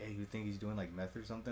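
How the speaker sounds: secretive, hushed half-whisper. Retelling what a coworker half-whispered in the bathroom: imitating a half-whisper. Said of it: "my coworker whispers to me".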